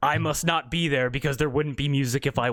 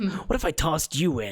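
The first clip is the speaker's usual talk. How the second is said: menacing, threatening tone. Voicing a character who steps close to Rhonda: menacing threat. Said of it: "He's like".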